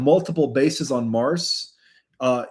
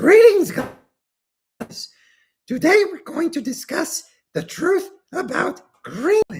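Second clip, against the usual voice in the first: very high, squeaky character voice with big swoops; 14 semitones higher than usual. Redoing a Greenland presentation at another speaker's suggestion, doing a Yoda impression. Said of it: "somewhat of a Yoda interpretation".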